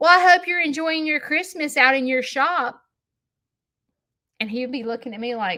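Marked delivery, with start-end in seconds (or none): 0.0-2.8 put-on rude, snarky, snide voice, pitched up. Retelling a rude remark to someone coming in: imitating own rude remark. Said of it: "I would make rude comments".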